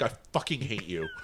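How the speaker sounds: put-on sarcastic delivery. Imitating the other speaker's sarcastic side to them: imitating a sarcastic tone. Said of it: "you have that sarcastic side of you that it's like".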